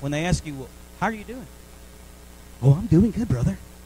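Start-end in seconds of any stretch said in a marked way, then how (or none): 2.6-3.6 very loud, booming TV game show host voice. Mimicking a churchgoer asked how they're doing: game show voice. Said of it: "You get like this game show voice".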